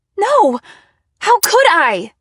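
very high, very loud, shrill, drawn-out screaming. Narrator answers a woman's retort; screamed. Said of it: "I screamed".

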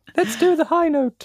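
very high, squeaky cartoon-mouse voice, squeaked way up high. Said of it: "That sounds a little bit like Mickey Mouse".

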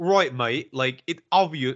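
fake, put-on British accent. Imitating a British person's cold take: put-on British accent. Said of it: "he doesn't sound like this, but he's British".

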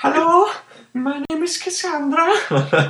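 fake, very high-pitched put-on voice. Retelling greeting people on voice chat, in a high-pitched put-on voice. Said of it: "I can't lose the voice".

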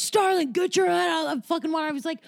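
harsh, high-pitched screaming yell. Speaker recalls a water polo coach yelling at them: retelling a coach screaming. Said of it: "I can remember them just screaming at me".

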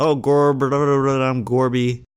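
bad cartoon voice, drawn-out "I'm", underwater-sounding. Someone has just named Goofy as a character; offer your impression and do a bad Goofy impression. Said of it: "You want to hear a good Goofy impression?".

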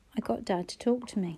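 plain reading voice

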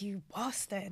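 mock under-breath muttering. Retelling their reaction when he came back, retelling an under-breath curse. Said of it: "Even under my breath".

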